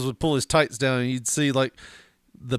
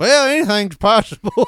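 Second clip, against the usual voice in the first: tired, weary, pitched-up voice; 7 semitones higher, 4 dB louder than usual. Retelling Mom's answer about the snake: imitating a tired mother. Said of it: "in her tired single mother self".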